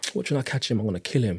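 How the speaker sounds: mock under-breath muttering. Retelling angry words once said about the older brother: imitating muttering under breath. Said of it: "I did say under my breath to myself".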